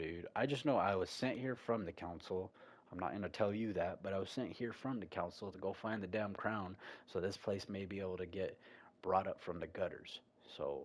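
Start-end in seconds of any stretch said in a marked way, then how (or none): none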